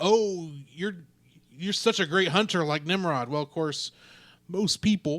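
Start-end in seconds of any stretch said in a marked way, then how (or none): none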